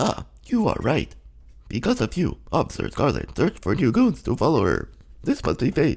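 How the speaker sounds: put-on robot voice. Voicing the robot Officer Scarlet during a game episode, in a robot voice. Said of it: "so we're gonna robot voice it up".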